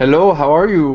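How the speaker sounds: attempted Irish accent, loud. Greeting a newly welcomed guest: attempted Irish accent. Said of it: "I tried to do like an Irish".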